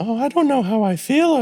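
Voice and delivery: very high-pitched voice. Describing a comedian's bit after a joke: Jim Gaffigan audience member voice. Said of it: "he'll do this kind of audience member voice".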